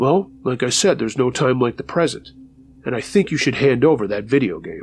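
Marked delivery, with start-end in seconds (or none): none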